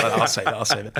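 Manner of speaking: ordinary talk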